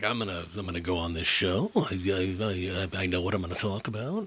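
careless offhand drawl with long drawn-out "I". Imitating a guest who went on a show knowing it was bad: imitating someone not caring. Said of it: "he said it like he knew it was bad, but he didn't give a shit".

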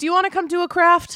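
put-on Long Island accent. Quoting the host who greets the speaker at the door, thick Long Island accent. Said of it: "who has this like thick Long Island accent".

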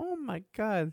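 put-on high, hushed little-girl voice. Predicting how Jeff will react, imitating a little girl. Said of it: "gonna be like a little girl".

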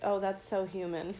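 ordinary talk

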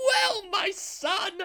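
very high, loud, shrill scream. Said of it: "scream from the top row".

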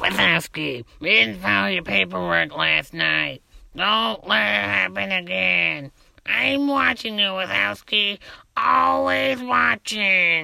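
rough, raspy, creaky put-on voice. Hosts play a listener's emailed impression on air, Roz impression. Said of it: "I do the perfect Roz impression".

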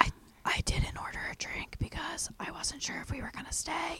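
hushed whisper, halting and stumbling start. Retelling meeting Larry in a dead silent bar: imitating Larry whispering. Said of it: "we're whispering at this point".

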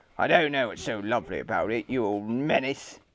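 low, snarling, snarled retort. Narrator reading Mr. Gum's retort to Mrs. Lovely, snarled. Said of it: "snarled Mr".

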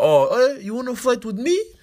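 very high, taunting voice. Retelling how Khabib challenged someone to a fight: imitating Khabib. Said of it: "Khabib was like".

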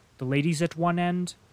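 ordinary delivery

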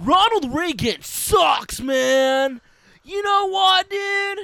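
very high, loud, stretched-out man's voice. Describing the stock characters of a teen show: stock political-guy voice. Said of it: "And then you got the political guy".

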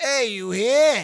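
loud, heavy put-on Brooklyn accent. Retelling how the brother delivered news: imitating brother's Brooklynese. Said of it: "delivering the news in his very Brooklynese".

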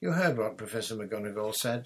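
ordinary delivery

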